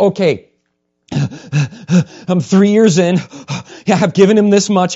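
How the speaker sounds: loud, high, sighing, reluctant complaining tone. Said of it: "Like you go".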